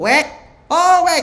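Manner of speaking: shrill, very high, loud nagging call. Explaining how to tell voices apart by intonation, imitating Bu Kartini's call. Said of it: "Kalau nadanya begini ... Itu udah pasti Bu Kartini ... intonasi orang rumah".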